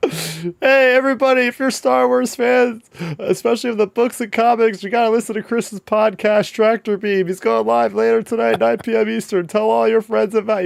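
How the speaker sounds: very high, shouted announcing yell to a room. Retelling a coworker yelling across a crowded gym floor: imitating Carter yelling. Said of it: "he starts yelling out in the middle of the gym floor".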